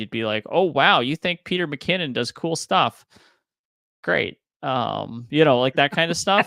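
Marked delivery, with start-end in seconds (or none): 0.5-4.4 acted-out, pitched-up, sarcastic, unimpressed tone. Imitating how a listener would react to a favourite creator: imitating an unimpressed reaction. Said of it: "it wouldn't blow your mind".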